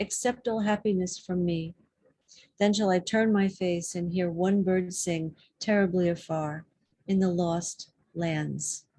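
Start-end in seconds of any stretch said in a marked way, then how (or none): none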